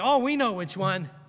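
ordinary talk

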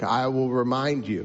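put-on heavy, laid-on-thick Mississippi accent. Quoting a seminary professor before he reads scripture, in a thick Mississippi accent. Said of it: "He had this thick Biloxi, Mississippi accent".

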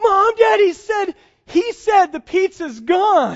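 put-on very slow, high, loud, drawn-out weepy little-kid sobbing. Parent retelling a car ride home, acting out a young child, imitating a child crying. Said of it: "starts crying like".

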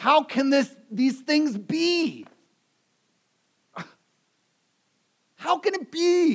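put-on, rather exasperated, very high-pitched voice. Speaker retelling Nicodemus questioning Jesus, mock-exasperated. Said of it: "in a rather exasperated tone".

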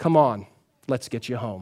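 calm, soft, grandfatherly voice. Retelling a movie ending where the old man carries the boy: imitating a calm grandpa-like voice. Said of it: "in a calm, grandpa-like voice".

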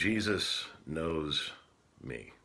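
hushed, quiet, soft delivery. Retelling an auntie's answer to a man's question, said quietly. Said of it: "she looked at him and said quietly".

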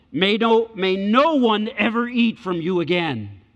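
grave, low, drawn-out, upset voice. Speaker retells Jesus cursing the fig tree, acting out a lower, upset voice. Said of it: "his voice got lower and he was upset".

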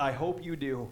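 muttering under breath. Retelling a preacher's sermon and his aside; retold muttering under his breath. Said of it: "sort of under his breath".

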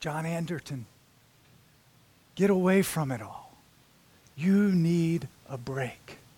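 gentle, calm, lulling, soothing tone. Narrating the invitations calling to a man, act out a calm, soothing voice. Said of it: "this calm, soothing voice which says".

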